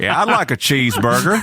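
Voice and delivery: southeastern American accent. Showing how a Southeast accent sounds dumber: Southeast US accent. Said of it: "my native, uh, Southeast accent".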